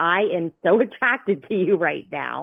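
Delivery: ordinary delivery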